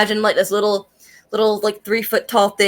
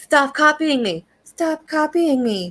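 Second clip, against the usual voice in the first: play-acted, really bitchy and snarky, pitched up; 7 semitones higher than usual. Describing a character who echoes people back, mimicking a snarky tone. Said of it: "she'll echo it back in a in a really snarky tone".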